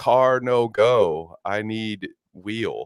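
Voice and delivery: put-on, simplified pidgin broken English. Mocking how Americans talk to poor English speakers: mock broken English. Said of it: "meet them halfway and say".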